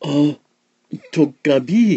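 startled, high, gasped exclamation. Reading a story aloud, the narrator voices a character's gasp. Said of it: "Bear Blossom gasped".

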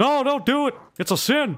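very high, comic, put-on dad character voice. Playing a propane-selling dad character in a game, put-on dad character voice. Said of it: "I am [name], if I'm not mistaken. I'm [name]".

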